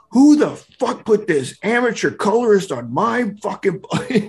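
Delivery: mock shouting rant, high-pitched and yelled. Recalling a night phone call about the colorist, imitating Mike Grell yelling. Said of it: "he's yelling at me like".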